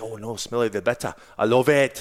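put-on Scottish accent. Retelling what a woman in a class said: imitating a Scottish accent. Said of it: "now she's Scottish".

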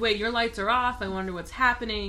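usual speaking voice

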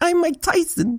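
very high-pitched squeaky voice. Showing how a Mike Tyson impression should go: Mike Tyson impression. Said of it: "all you have to say is".

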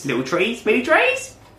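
very high, squeaky TV fitness-cook voice. Reading out a recipe's ingredients: Joe Wicks impression. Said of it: "That's my impression of Joe Wicks".

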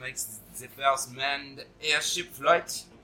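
mock French accent, slow and drawn out.

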